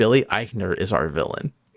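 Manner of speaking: normal talking voice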